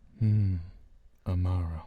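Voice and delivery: very low, majestic commercial-announcer voice. Saying the name again on request: sounds like an ad. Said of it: "that sounds like an ad".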